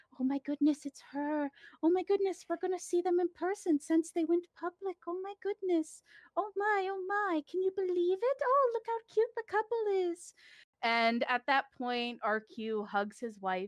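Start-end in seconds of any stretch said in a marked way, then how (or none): 0.2-10.4 crowd whispering excitedly, higher. Voicing a gossiping crowd at a party: crowd whispering excitedly. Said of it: "everyone kinda start whispering".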